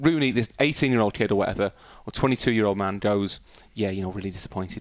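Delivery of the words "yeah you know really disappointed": put-on Scouse accent. Quoting Rooney after going out, the speaker uses a Rooney Scouse accent. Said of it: "The reason I'm doing a Scouse accent is because Rooney's the best example".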